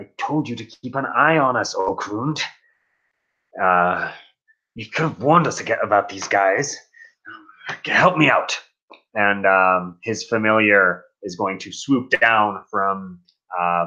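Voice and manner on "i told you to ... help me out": half-heard grumble, muttered under the breath. During a game fight, Silmir addresses Okrund; muttering under his breath. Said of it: "Silmir kind of mutters on under his breath".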